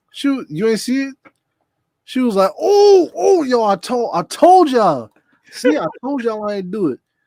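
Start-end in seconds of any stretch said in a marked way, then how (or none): 2.6-7.0 loud, swooping, hyped-up, adamant insistence. Retelling how someone insisted they did nothing, imitating Naomi overhyped. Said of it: "What you so hype about?".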